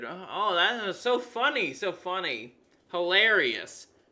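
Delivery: heavily sarcastic, amused, slow, swooping. Reacting to a joke post read aloud from Blue Sky: sarcastic. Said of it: "I'm being sarcastic, of course".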